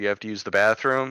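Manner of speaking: usual speaking voice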